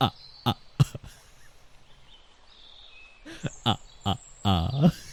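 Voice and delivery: whispery, breathy, soft put-on vampire laugh. Speaker redoing a laugh someone didn't like, doing a vampire laugh. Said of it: "my vampire laugh".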